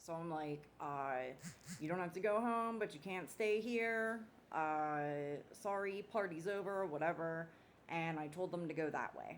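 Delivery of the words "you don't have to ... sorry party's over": high, loud bouncer-style announcement over a mic. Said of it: "it sounds like there's a microphone".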